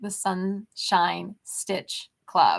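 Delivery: very slow, careful delivery, each word placed deliberately. Brainstorming club names aloud, trying out a new name very slowly. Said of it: "I have to say that so slow".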